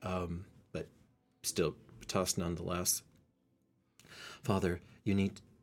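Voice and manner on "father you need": put-on girl character voice. Voicing the tusked girl who calls to her father: girl character voice. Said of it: "I'll get her voice".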